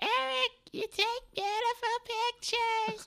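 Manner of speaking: clumsily done, very high-pitched, drawn-out voice. Quoting a friend's praise of their photos, bad imitation of a friend's voice. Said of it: "a really bad imitation of her voice".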